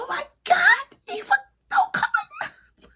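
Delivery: very high, loud, shrieking scream. Retelling own reaction while watching a show: imitating own screaming. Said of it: "I'm just screaming".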